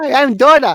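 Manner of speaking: high, loud, excited, thrilled yell. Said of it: "sliding down the escalator going".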